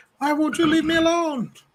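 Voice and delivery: bad cartoon voice, yelled very high and shrill. Retelling how a boy reacted to his sister's meddling, in a not-good Dexter voice. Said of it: "I don't have a good Dexter voice".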